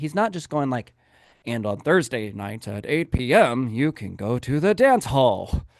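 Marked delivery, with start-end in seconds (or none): 1.4-5.6 put-on mechanical, robot-like reading. Showing how a dull real estate video would sound: mock robotic delivery. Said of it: "it's not even just like a robot".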